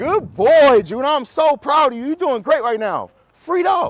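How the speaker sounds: very high, loud, gushing, enthusiastic voice. Showing how to praise a dog on a walk: enthusiastic praise. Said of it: "You gotta be like this".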